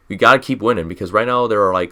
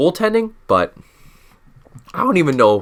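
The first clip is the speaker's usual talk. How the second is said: cracking, breaking voice, pitched up; 5 semitones higher than usual. Speaker assessing the team's situation before the deadline, voice cracking. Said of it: "Was that even a voice crack?".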